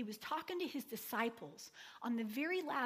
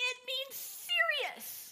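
mock very high five-year-old's yell; 14 semitones higher, 5 dB louder than usual. Retelling how five-year-old Ava answered the speaker's friend, imitating Ava yelling. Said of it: "And Ava yelled".

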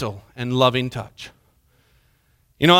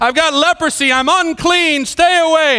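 high, loud yelled delivery. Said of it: "they were supposed to yell out".

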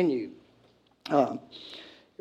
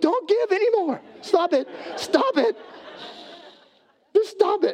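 mock pastor pleading, very high and squealing. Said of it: "the pastor has to get up and go".

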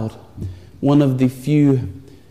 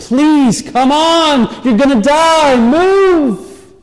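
very high, loud, crying, tearful, begging pleading voice; 14 semitones higher, 5 dB louder than usual. Retelling a film scene where Atreyu begs his sinking horse, Atreyu crying and pleading. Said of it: "he's crying and he's pleading".

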